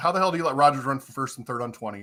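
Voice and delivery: normal talking voice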